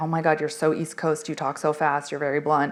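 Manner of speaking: usual speaking voice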